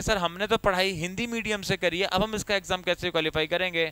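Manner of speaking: ordinary talk, nothing marked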